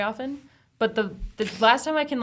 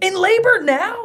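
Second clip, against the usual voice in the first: very high-pitched, loud, over-the-top dramatic cry; 11 semitones higher, 7 dB louder than usual. Pretending to be on the phone while walking past sellers: mock dramatic phone line. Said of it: "the most dramatic line I can think of".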